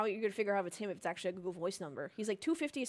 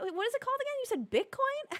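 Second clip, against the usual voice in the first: put-on dumb girl voice, much higher; 3 dB louder than usual. Retelling a conversation with a man, slipping into a stupid girl voice. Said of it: "my stupid girl voice".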